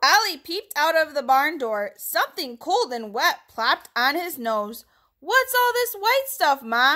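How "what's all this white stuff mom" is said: squeaky, high little puppy voice. Narrator reading a puppy's question to his mom in a storybook, squeaking. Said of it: "he squeaked".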